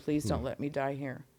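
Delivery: tearful, crying, pleading delivery. Retelling a prayer begged while crying in a hospital bed: retelling a tearful plea. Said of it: "I begged him in that bed that night, crying".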